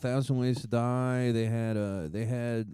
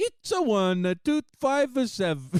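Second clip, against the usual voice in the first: put-on alien creature voice, higher; 10 semitones higher, 3 dB louder than usual. Joking about reading out a credit card number on the phone: Jar Jar Binks voice. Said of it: "start doing Jar Jar Binks' voice".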